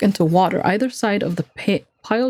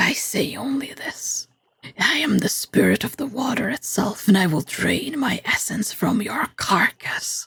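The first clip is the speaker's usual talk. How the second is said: slow, growling serpent-like creature voice; 2 semitones higher, 3 dB quieter than usual. Narrator voicing the water serpent as it answers the player, growling serpent voice. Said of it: "it growls".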